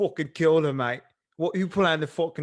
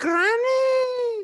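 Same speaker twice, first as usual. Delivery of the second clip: "granny" pitched way up and drawn out; 4 dB louder than usual. Describing a show, imitating how the grandson character talks, in [name]'s voice. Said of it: "He talks like this".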